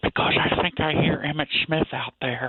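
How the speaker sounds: speaking softly. Caller in a safe room talking to radio hosts, hushed. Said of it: "I just can't talk too loud".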